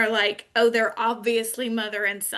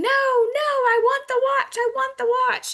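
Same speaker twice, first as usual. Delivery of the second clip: acted very high child's tantrum scream, drawn-out "I"; 4 dB louder than usual. Retelling a boy's meltdown over a watch in a store, imitating a child screaming. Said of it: "He's screaming".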